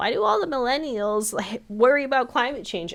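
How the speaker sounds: scornful, high, mocking voice. Talking about an old movie's forest-destroying villain, the speaker retells a mocking voice. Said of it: "in my mocking voice".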